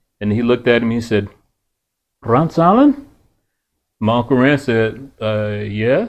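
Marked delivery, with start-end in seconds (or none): 2.2-3.1 put-on thick Irish accent, higher, louder. Speaker recalls a man in Ireland greeting his Uncle Rance; thick Irish accent. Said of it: "with this thick Irish accent".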